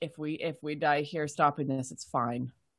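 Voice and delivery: muttered, murmured under the breath. In a game scene, a character near the players speaks, murmuring. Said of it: "just murmuring".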